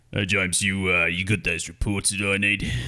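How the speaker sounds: put-on low, deep-voiced Australian accent. Describing a man they might pour a drink for, doing his voice: deep Australian accent. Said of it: "he has a very deep like Aussie".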